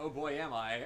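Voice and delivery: ordinary talk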